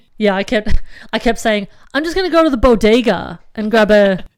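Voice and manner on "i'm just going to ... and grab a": bad, terrible put-on American accent. Speaker recalls what they kept saying about the bodega, in a bad put-on American accent. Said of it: "I'm actually not not not normally that bad at American accents, but that one was terrible".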